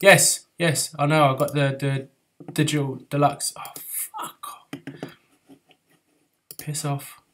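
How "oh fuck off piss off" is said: irritated, annoyed whisper. Swearing at game pop-ups while playing: getting annoyed. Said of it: "I'm getting annoyed now".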